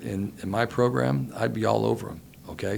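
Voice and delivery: ordinary talk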